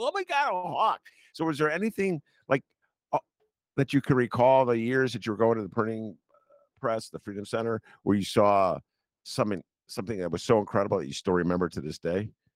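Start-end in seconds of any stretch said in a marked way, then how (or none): 0.0-1.0 very high, excited, thrilled gasp. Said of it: "My wife and I".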